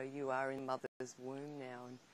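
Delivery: ordinary delivery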